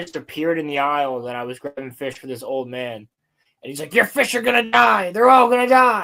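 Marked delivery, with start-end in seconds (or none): 3.9-6.0 mock, loud, high, furious ranting angry yell. A shop worker retells what a man in the aisle said, imitating his yelling. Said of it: "The guy started yelling".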